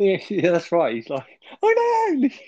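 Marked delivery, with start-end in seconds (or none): 1.6-2.3 very high-pitched squeak. Repeating Rodney's pub scene line: high-pitched Rodney voice. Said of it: "really high pitched".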